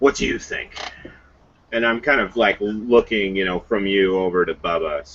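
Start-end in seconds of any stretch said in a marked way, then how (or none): 0.0-0.8 quietly muttered under the breath. Asking another character about a changed companion, said under the breath. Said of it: "kind of under, under my breath".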